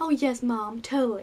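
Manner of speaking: imitated American accent. Retelling the daughter's reply to her mom, in an American accent. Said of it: "My American accent makes me laugh".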